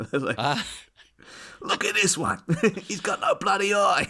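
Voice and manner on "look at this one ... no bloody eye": very high, thrilled Australian wildlife-host style voice. Imagining Steve Irwin hunting the Miami Ninja, Steve Irwin impression. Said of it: "Steve Irwin was there".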